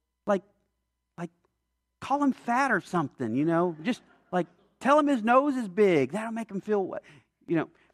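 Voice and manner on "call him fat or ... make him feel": tongue-in-cheek sarcastic tone. Suggesting mean things to tell a church visitor: sarcastic. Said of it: "I'm being sarcastic".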